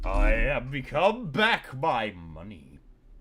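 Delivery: announced like a fight introduction. Selling materials for coins in a game, in a Smash announcer voice. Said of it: "You said that like the Smash announcer says some names".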